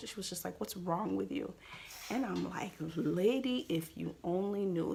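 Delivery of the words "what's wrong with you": mock attitude, faster. Retelling how a lady spoke to the speaker while they cried, mimicking her attitude. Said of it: "Like literally with that type of attitude".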